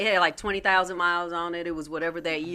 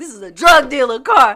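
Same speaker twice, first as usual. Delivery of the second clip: very loud, pitched-up, furious, angry outburst; 7 semitones higher, 15 dB louder than usual. Retelling getting into the car for a test drive: retelling a pissed-off remark. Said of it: "I'm pissed".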